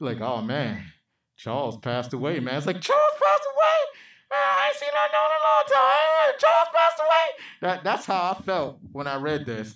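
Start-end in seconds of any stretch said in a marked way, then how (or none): 2.8-7.8 very high-pitched, stunned, raised astonishment. Acting out hearing that an old friend has died, in a high-pitched voice. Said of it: "Why are your voice so high-pitched?".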